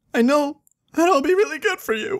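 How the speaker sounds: weepy, high-pitched, tearful crying. After being teased by the others, speaking while crying. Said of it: "don't cry".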